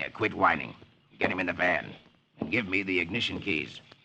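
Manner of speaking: snarled, hostile delivery. Narrator reads Corky answering his complaining accomplice, snarling. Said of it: "Corky snarls".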